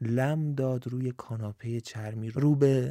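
plain reading voice

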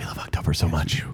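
low, soft whisper.

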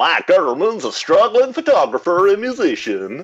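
put-on high-pitched Louisville Kentucky accent. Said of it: "a Louisville, Kentucky accent".

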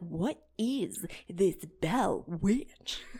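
very drawn out, slow, every word leaned on hard. Imitating how a ghost show host emphasizes his words: Zach Bagans emphatic delivery. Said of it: "the way Zach Bagans emphasizes his words".

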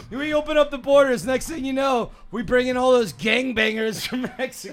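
put-on very high, loud, sour, disgruntled old-man griping. Speaker mocks the other speaker's remark, imitating an old disgruntled country-club man.

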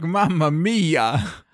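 hammy, cheesy commercial announcer exclamation. Imagining someone in a cheesy pasta sauce commercial: cheesy pasta sauce commercial voice. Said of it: "someone in, like, a cheesy, like, pasta sauce commercial being like".

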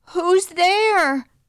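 very high-pitched, nervous voice with rising tone. Narrator reads the princess answering voices from inside the closet; said nervously. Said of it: "so she said nervously".

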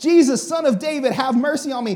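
acted-out shouting. Retelling a scene, acting out somebody shouting, imitating someone shouting. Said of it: "they rebuke".

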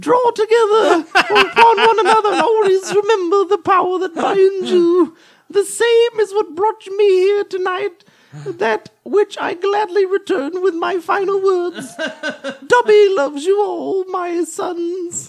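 very high, loud, squeaky voice. Giving final words to everyone gathered, done in a Dobby voice. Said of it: "you were doing Dobby's voice".

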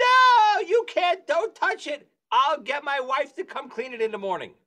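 high, worked-up, agitated yelling and screaming. Retelling a man refusing help cleaning up, retelling a scream. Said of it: "he starts screaming at me".

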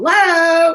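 mock chipper voice. Retelling how they answer the phone: upbeat hello, imitating self. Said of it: "real kinda upbeat".

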